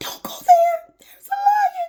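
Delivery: very high-pitched, squeaking voice. Recounting a past moment, the speaker repeats their own warning in a squeaky voice. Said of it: "my voice became squeaky as".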